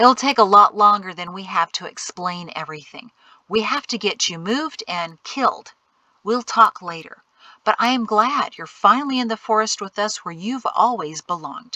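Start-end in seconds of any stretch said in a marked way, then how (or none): none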